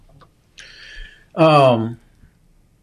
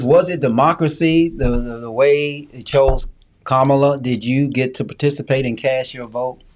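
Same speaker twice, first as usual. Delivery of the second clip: normal talking voice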